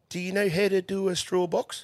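put-on old man's thick, high New Zealand accent.

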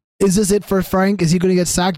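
plain

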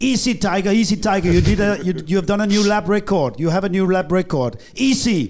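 very high, loud shouting. Retelling what he shouted on the radio about a lap record: imitating someone shouting. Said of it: "he was shouting at me".

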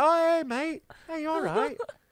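put-on sneaky, high, fake-friendly tone. Retelling how a sneaky monkey came up to a man: imitating a sneaky monkey. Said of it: "he's come up all like".

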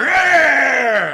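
loud, high, aggressive growl.

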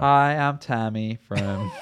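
creepy, very slow, drawn-out drawl. Doing the put-on voice again after others mention it: creepy Tammy voice. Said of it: "Creepy, creepy".

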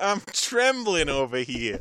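put-on New York accent. Voicing a rat character in a made-up cartoon scene: new york accent. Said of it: "Can they all have like New York accents?".

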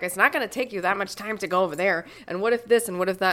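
blunt, harsh, pushing tone. Retelling what the director said while planning the story: imitating Vicky. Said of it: "I love your imitation of me".

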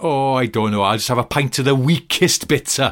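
too loud. Retelling a friend's order in a rough pub: imitating a friend too loud. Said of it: "he went a little bit too loudly".

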